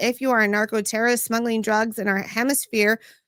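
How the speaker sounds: normal talking voice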